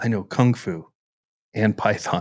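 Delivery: put-on whispered action hero voice. Imitating Neo waking up after debugging in his sleep: whispered Neo impression. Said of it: "that was my best impersonation".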